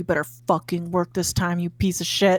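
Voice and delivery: hushed whisper. Character flourishes a card and speaks to it, whispering to a card. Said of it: "she kind of whispers to it".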